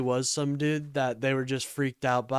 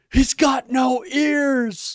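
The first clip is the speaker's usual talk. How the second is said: very high, loud, slow, drawn-out, booming shrieking scream; 12 semitones higher, 8 dB louder than usual. Retelling how a passenger screamed from the car: imitating someone screaming. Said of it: "the motherfucker in the back of the car screams".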